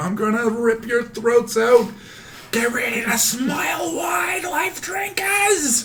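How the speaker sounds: very high, shrill, climbing, drawn-out battle scream. Attacking enemies in a tabletop game, screaming in character. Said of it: "and I'm screaming".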